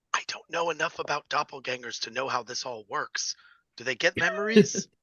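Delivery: quiet, hushed, soft whispered aside. Speaking in character after looking back at another character: whispering. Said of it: "just kind of whisper".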